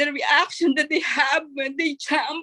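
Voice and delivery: words pushed out through tears, crying. Speaker moved by people's reaction to a new office opening, crying while talking. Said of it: "I'm crying".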